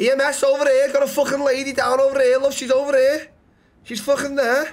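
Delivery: put-on very high-pitched Scouse Liverpool accent. Someone who says she just got hit, calling EMS over: Scouse accent. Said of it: "Scouse, okay".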